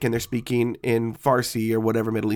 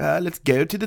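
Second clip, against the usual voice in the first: bad put-on French Canadian accent, pitched up; 6 semitones higher than usual. Mocking two men's accents by imitating them: imitating a French Canadian accent. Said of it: "French Canadian accents".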